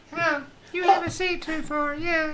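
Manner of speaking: joking, put-on high-pitched voice. Bantering with another speaker, repeating a boast in a put-on high-pitched voice. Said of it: "you make your voice high pitched".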